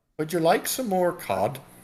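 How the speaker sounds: put-on Irish accent, slipped into softly. Speaker imitates friendly people with cute accents, in an accidentally Irish-sounding accent. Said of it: "That's more Irish".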